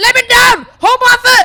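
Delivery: high, loud urgent shout. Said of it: "And I was like".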